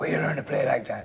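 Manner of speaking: soft, raspy voice. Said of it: "and he that raspy voice".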